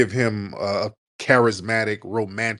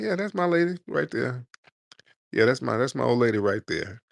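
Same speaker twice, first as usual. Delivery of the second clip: mock casual laid-back voice; 3 semitones higher than usual. Showing how players talk about their partner: imitating a casual player. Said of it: "we just real casual with it".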